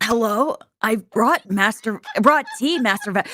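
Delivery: put-on small boy voice. In a role-play, playing a small servant child bringing tea, in Ash Ketchum voice. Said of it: "gonna bring out my Ash uh, Ketchup voice".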